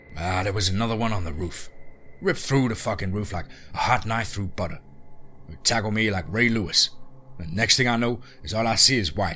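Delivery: ordinary delivery, nothing marked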